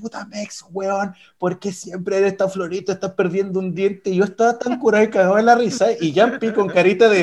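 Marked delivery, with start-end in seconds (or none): 0.0-4.1 acted, swearing, scolding tirade. Retelling how Caco came running to scold: imitating Caco cussing out. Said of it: "me empieza a putear".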